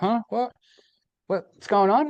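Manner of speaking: put-on very high, slow, dazed groggy bewilderment. Retelling how he faked waking up in the park: faking being just woken. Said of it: "pretend I'm fucking s-".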